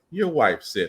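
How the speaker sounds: condescending, talking-down, superior tone. Quoting what he said to her, in a mock-condescending tone. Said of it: "in the condescending tone that you are".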